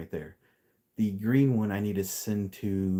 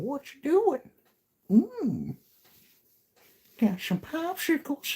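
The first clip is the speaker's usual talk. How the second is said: put-on cartoon voice, much higher, slower. Recalling phoning someone and talking to him in a Herbert the Pervert voice. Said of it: "do like Herbert the Pervert going".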